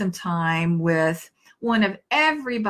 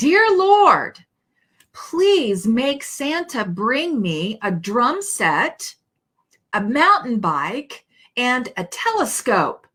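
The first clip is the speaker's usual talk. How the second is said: put-on loud shouting in a child's voice; 4 semitones higher, 3 dB louder than usual. Telling a joke, a grandchild saying bedtime prayers: imitating a child shouting. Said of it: "Aiden starts speaking in a really loud voice".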